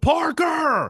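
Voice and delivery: loud high-pitched yelling.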